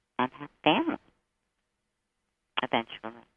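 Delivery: whispering. Starting a reading for a caller's question: whispering. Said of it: "I whisper when I do this".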